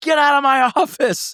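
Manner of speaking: mock, very high, furious shrieking scream. Retelling how the landlord stood on his chair: imitating a landlord screaming. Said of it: "screamed at me".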